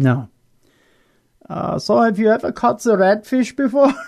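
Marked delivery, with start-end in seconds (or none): 1.8-3.9 put-on German accent, pitched up. Voicing a norwegian in a retold story, in a german accent. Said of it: "I know that's a German accent".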